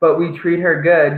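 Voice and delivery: ordinary talk, nothing marked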